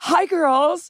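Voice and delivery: hammy overplayed delivery. Retelling how an actor greeted laughing co-stars: imitating Michael Cassidy overplaying. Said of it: "He would, like, overplay it and play it so big".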